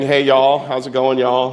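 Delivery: put-on twangy southern accent. Showing how he says y'all himself: twangy southern accent. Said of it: "sometimes I get a little twangy".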